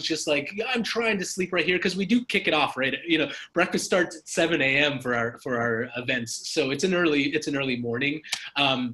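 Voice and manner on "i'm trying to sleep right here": acted-out scream at top of lungs, high-pitched. Retelling a man in his underwear interrupting a loud introduction: imitating someone screaming. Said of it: "just starts screaming at us at the top of his lungs".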